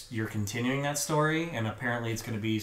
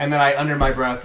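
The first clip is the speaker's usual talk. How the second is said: usual speaking voice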